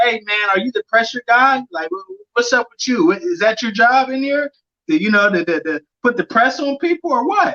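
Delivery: acted frustrated retort. Recounting what he told a man urging caution at boxing, retelling a frustrated retort. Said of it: "I get a little frustrated with him".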